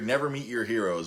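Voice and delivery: ordinary talk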